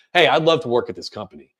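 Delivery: assertive, confident, pitch dropping down on "company". Showing how to sound assertive to a company, falling at the end. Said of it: "going down at the end of your uh, sentences give you a lot more confidence".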